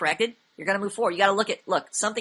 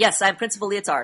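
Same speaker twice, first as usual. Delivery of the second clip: firm, definite, commanding, authoritative tone; 4 dB louder than usual. Russian guy illustrating a definite speaking tone, definite authoritative tone. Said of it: "a definite authoritative tone".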